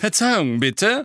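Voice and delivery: scornful, sneering, high pitch, loud. Narrator voicing Malfoy interrupting Hagrid, sneering. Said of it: "sagte Malfoy höhnisch".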